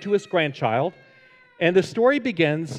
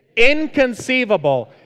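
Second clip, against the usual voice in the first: enthusiastic, pitched-up, full of gusto and zest; 5 semitones higher, 5 dB louder than usual. Trying the misused word again, say it with more enthusiasm. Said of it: "You got to say that with more enthusiasm".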